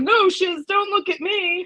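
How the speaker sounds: very high, drawn-out, mocking delivery. Mocking people who deny blame while throwing their hands up: mocking imitation of a denial. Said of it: "throwing your hands up like".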